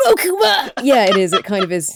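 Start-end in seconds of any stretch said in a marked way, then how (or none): 0.1-0.7 put-on generic dubbed anime boy voice, very high. Showing the voice they can do: dubbed anime boy voice. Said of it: "a generic dubbing anime boy sound".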